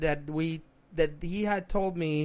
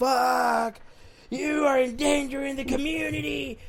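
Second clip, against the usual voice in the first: put-on high angry hollering, the word fuck stretched long; 9 semitones higher than usual. Retelling an embarrassing man in front of people waiting, imitating a man hollering. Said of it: "Was like hollering in there".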